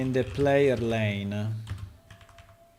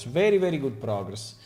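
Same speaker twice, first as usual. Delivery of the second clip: ordinary delivery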